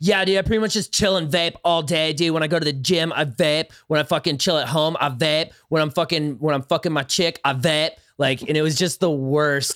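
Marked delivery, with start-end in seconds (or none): 0.0-7.9 exaggerated, obnoxious, insufferable bro character voice. Retelling a BuzzFeed video profile, staying in Blake character voice. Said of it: "I stayed in character the whole time".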